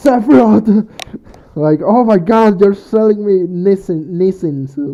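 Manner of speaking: high, very loud, full-volume shout. Imagining a character's reaction to a nissan commercial, acting out a yell. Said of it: "why I'm yelling right now".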